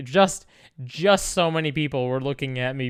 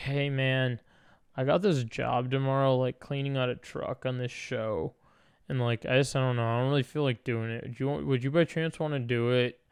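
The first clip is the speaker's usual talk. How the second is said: put-on weary, soft, worn-out, drained-sounding voice; 6 dB quieter than usual. Retelling a guy asking him to take over a job, imitating someone sounding tired. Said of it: "he sounded so tired".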